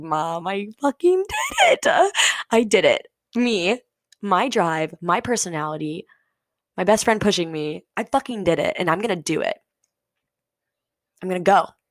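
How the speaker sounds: put-on tearful crying through the words. Retelling what was said to mom at lunch: retelling own tearful words. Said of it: "and I was crying".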